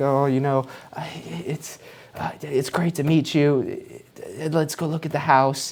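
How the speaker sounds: lacking confidence, hesitant. Advising on meeting a realtor, showing how not to sound, unconfident talking. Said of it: "if you're there talking like this".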